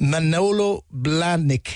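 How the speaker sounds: very slow, unsure, careful sounding out of words. Reading a news story, unsure of a brand name's pronunciation, said slowly. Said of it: "I'm going to say this slowly".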